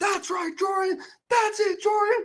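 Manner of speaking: play-acted, very high, excited cheering shout. Recounting watching a play unfold, retelling his yelling. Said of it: "I think I was yelling something like".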